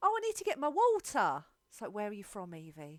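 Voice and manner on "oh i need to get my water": put-on very high, very loud Essex accent, t dropped. A parent quotes their daughter, imitating Evie's Essex accent. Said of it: "You've never been to Essex. Why do you sound like that?".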